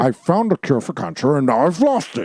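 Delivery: put-on Scottish accent. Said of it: "my Sean Connery ad-, impression".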